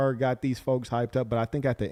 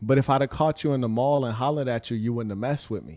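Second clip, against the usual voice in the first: normal talking voice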